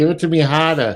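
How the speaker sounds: put-on Boston accent, r's dropped. Joking about getting away and heading home, in a mock Boston accent. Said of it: "doing the Boston accent all day".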